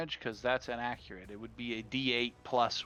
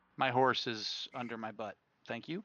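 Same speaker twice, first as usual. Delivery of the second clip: plain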